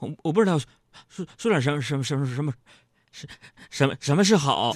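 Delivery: low, nervous stammer repeating every syllable. Recalling talking to the woman called a goddess, retelling own stammering. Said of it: "我就磕磕巴巴的".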